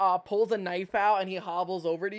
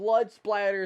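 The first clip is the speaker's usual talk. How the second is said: plain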